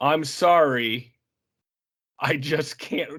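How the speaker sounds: mock flat deadpan delivery. Quoting a man's reply to people who objected, retelling a deadpan line. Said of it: "he says it so deadpan".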